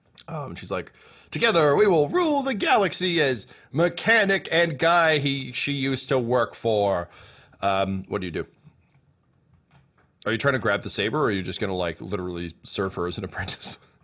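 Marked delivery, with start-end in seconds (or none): 1.4-7.1 grandiose villain-like voice, grand, sweeping and slow. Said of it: "grandly gesturing".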